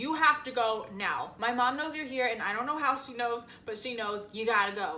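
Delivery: ordinary delivery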